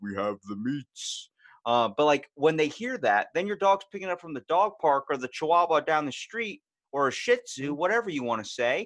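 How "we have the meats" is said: deep, slow commercial announcer delivery. Showing off their deep voice, do the Arby's commercial guy's line in deep Arby's voice. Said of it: "sounds like the guy who does the Arby's".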